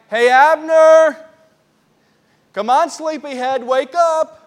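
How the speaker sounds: mock teasing, loud, drawn-out sarcastic call. Retelling David calling back from a hill to Abner: sarcastic calling out as David. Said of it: "he's using a little bit of sarcasm here".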